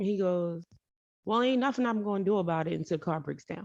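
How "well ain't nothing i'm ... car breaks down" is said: snippy, dismissive, attitude-laden tone. Retelling a partner's reply on the phone: imitating an attitude in his voice. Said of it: "I heard the attitude change in his voice".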